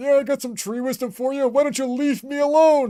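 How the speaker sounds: put-on very high old tree wizard fantasy voice. Speaker voices the tree wizard answering the players' greeting, old tree wizard voice. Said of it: "old tree wizard".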